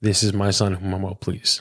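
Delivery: normal talking voice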